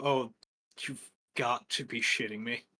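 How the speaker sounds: thoroughly annoyed, very irritated, fed-up tone. Voicing a scout who spots the party: very irritated tone. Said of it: "you both hear him in a very irritated tone go".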